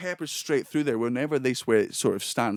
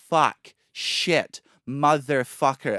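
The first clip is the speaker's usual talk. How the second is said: loud American accent, every vowel stretched and drawn out; 5 dB louder than usual. Speaker explaining how americans swear, then showing it: drawn-out american swearing. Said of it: "they elongate the vowels".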